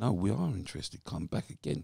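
ordinary talk, nothing marked

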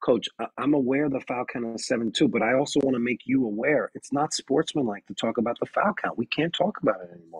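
kindly, gentle, patient tone. Showing a response to a coach about the foul count: real kind. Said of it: "See how I got real kind with him there?".

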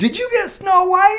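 play-acted stunned, shocked disbelief, very high-pitched. A father retells his daughter announcing her part, acting out his shocked reaction. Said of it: "And I'm like shocked going".

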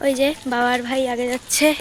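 hushed, very quiet voice. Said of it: "একদম আস্তে আস্তে কথা বলছি আমি".

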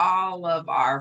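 ordinary delivery

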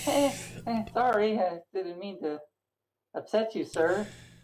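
sheepish, apologetic, high goblin voice. Voicing a goblin left alone, smiling and apologizing: sheepish goblin apology. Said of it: "gave this kinda crooked tooth smile, like".

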